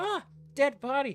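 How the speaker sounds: put-on very high, shrill, loud little-girl yell. Describing a game mission's little girl who yells at every enemy, imitating her yelling. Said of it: "she stops at every enemy and yells".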